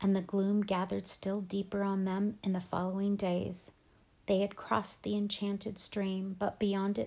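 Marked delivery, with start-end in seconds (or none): none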